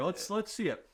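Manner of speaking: ordinary talk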